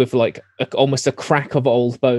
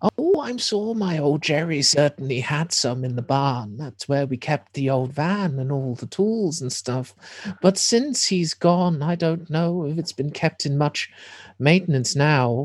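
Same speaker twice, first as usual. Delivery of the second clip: put-on elderly woman voice; 3 semitones higher than usual. In a tabletop game, a storyteller voices an old lady character, old lady voice. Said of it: "old lady".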